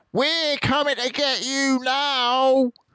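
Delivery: very high, jeering, taunting yell, "now" stretched out. Bunce, leaning out of his tractor toward Mr. Fox, yelling. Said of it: "yelled Bunce".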